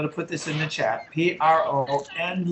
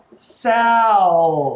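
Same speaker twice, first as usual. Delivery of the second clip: first syllable Sal stressed and louder. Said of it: "The first syllable is where we put the stress".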